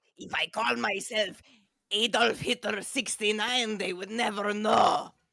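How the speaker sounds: clumsy, put-on German accent. Mid-conversation, the speaker practices a fake German accent. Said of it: "that's my uh, German accent".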